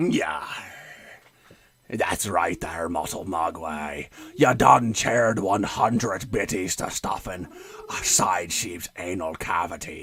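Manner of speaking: deep, full-on, very low pirate voice. Asked for an announcer voice, addressing a listener in a pirate voice. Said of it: "very pirate, very piratey".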